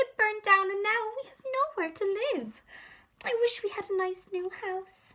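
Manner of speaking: squeaky voice, high and small. Reading a story aloud, the Mother Mouse answers George's question; squeaky Mother Mouse voice. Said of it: "squeaked the Mother Mouse".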